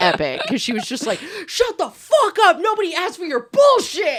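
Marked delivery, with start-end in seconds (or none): 1.5-4.2 acted-out very high, swooping scream. Retelling a friend screaming at a smart speaker: imitating someone screaming. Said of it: "started screaming at it".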